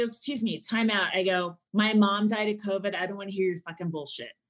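ordinary delivery

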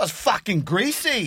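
put-on British accent. Answering a prompt to speak in British accents: British accent. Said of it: "in British accents".

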